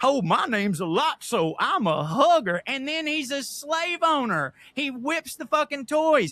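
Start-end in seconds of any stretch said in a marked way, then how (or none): 0.0-2.6 put-on heavily laid-on Southern accent. A speaker mocking a bear villain's accent, in a Lotso Savannah accent. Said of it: "speaks with a fucking Savannah accent".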